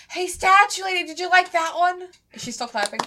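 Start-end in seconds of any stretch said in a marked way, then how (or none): 0.1-2.0 shrill, very high in-character shouted yell. Voicing a character calling out to a statue lady: in-character yell. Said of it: "And then I yell".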